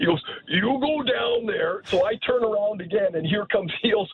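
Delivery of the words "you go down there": put-on, imitated big, deep voice. Retelling what Al asked back at the bench: Al's big deep voice. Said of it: "Al had that big, deep voice".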